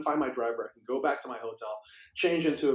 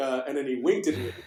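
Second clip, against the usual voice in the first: ordinary talk, nothing marked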